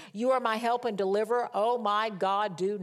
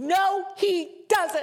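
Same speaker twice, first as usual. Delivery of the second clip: put-on shrill, very high, loud toddler tantrum voice; 9 semitones higher, 5 dB louder than usual. Retelling her reply to her child, acting out her own tantrum. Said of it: "having a tantrum like a two-year-old".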